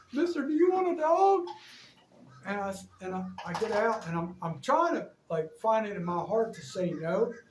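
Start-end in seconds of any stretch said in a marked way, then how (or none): 0.1-1.4 mock very high, loud, sobbing bawling wail. Retelling what a crying lady said: imitating a bawling woman. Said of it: "she's bawling".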